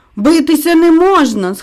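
high, anxious, worried shout. Narrating a story, onlookers react to a challenge to fight: shouted anxiously. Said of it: "схвильовано закричали інші".

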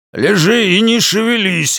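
high, barked, sharp delivery. Narrator voicing a man shouting at the pelerina as it is beaten, barked. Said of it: "рявкнул мужчина".

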